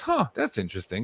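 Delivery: normal talking voice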